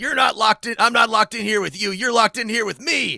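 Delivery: very loud, high, full-on screaming. Describing how a player can annoy the table in a superhero game, screaming.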